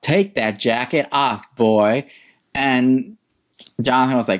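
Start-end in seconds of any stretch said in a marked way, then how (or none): 0.0-2.1 mock slow, drawn-out, mild yell. Retelling what someone yelled during an improv scene: imitating BJ yelling. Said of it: "And B J yelled".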